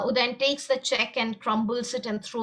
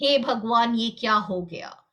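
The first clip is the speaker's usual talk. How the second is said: plain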